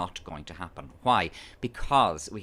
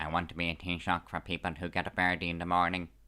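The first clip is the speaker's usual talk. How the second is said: flat, level drone, no rises or falls; 3 semitones lower, 3 dB quieter than usual. Explaining how to copy Varadkar's voice, doing a Varadkar flat drone voice. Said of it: "Varadkar has a flat drone".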